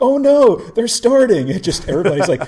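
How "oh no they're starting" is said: very high, stretched-out, drawn-out yell. Retelling how a guy at the bridge door yells: imitating someone yelling. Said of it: "he just yells".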